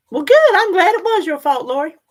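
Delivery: playful mock gloat, high-pitched, loud, teasing.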